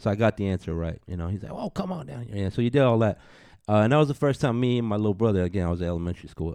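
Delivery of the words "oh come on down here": put-on high Louisiana accent. Retelling a player's quiz at an elementary school: Avery Johnson impression. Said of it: "he's got his Louisiana accent on".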